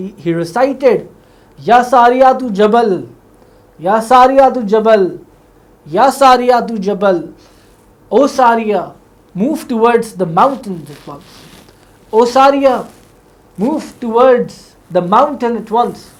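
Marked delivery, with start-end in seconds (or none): none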